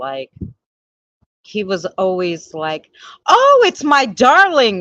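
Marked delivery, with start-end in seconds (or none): 3.3-4.8 booming, loud, swooping, comical ghost voice. Recalling a spirit that spoke through the spirit box, in a funny spirit voice. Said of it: "he had such a funny like voice".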